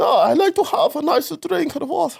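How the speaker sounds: German accent, breathless. Demonstrating a German accent; German accent running out of breath. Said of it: "runs out of breath at the end of sentences".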